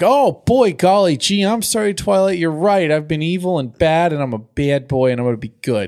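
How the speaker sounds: high, goody-goody, aw-shucks sweet, apologetic tone. Retelling Spike apologizing to Twilight: imitating Spike. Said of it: "And he's like".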